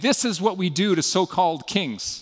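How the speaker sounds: ordinary delivery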